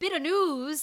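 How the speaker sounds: put-on Irish accent. Saying the show's segment name after being asked: Irish accent. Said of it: "Do the Irish one".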